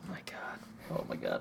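stunned, soft, voiceless whisper of disbelief.

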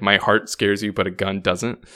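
normal talking voice

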